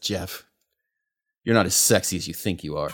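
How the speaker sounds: withering, disdainful, scornful tone of utter contempt. Voicing a character slipping from a player's grasp: utter contempt. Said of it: "looks up at you with just utter contempt".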